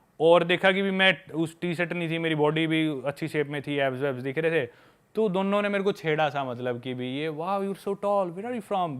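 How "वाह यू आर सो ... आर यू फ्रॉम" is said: teasing put-on British English accent, pitched up. Retelling how one of two girls teased him, british accent. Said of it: "ब्रिटिश एक्सेंट में बोली".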